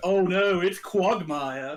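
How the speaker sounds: slow, bad put-on Australian accent. Retelling how the announcer in a Family Guy ad said the line: imitating Australian accent. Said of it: "in the Australian accent".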